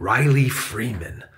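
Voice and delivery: ordinary delivery, nothing marked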